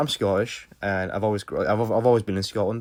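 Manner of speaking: normal talking voice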